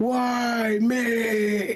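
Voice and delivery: very high blubbering crying wail, me stretched out. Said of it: "crying in the camera".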